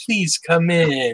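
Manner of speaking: nice, charming, welcoming, inviting front-desk tone. Retelling the welcome at the reception desk: imitating an inviting tone.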